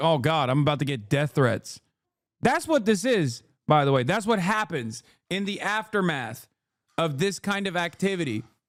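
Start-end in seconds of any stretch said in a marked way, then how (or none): 0.0-1.8 put-on terrified delivery. Imitating the filmed service worker's thoughts, imitating someone terrified. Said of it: "terrified 'cause she's being filmed".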